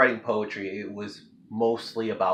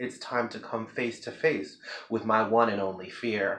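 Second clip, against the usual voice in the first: ordinary delivery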